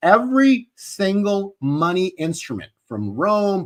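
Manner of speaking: slow, deliberate, repeated words.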